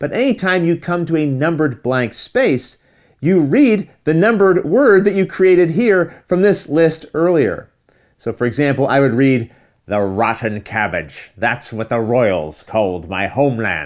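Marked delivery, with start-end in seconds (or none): 9.9-13.9 pirate accent, lower and slower. Explaining a story game, the speaker reads an example line in a pirate accent. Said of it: "you don't have to read with a pirate accent".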